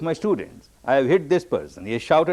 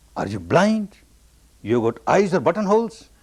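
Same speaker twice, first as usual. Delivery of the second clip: cross, angry shouted outburst; 3 semitones higher than usual. Recounting a person on the footpath kicked by a student, retelling an angry shout. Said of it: "this person shouts".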